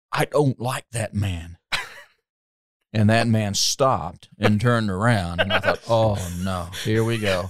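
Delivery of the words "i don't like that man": put-on blunt, outspoken, blurted delivery. Recounting a companion's remark about a man leaving the men's room, retelling a loud remark. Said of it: "just said very loudly".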